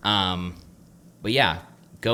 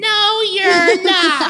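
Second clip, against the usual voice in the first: very high, loud, animated, swooping delivery; 8 dB louder than usual. Imitating his wife's reply to his claim about paying for coffee: impression of Savannah, his wife. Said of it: "that was a good impression".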